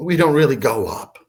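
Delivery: normal talking voice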